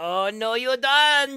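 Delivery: loud, high, badly done mock Mexican accent.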